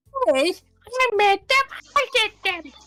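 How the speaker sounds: put-on very high, swooping cartoon kid voice. Welcoming Vincius to the table, doing a South Park impression. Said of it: "doing like a fucking South Park impression".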